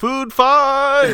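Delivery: very high, very loud, booming shout. A character calls out during a scene with goblins, yelling. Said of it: "Cavera yells".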